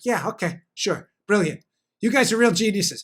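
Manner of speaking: put-on sarcastic tone. Acting out what he says to people he disagrees with: imitating own sarcastic reply. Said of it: "we could be very sarcastic with each other".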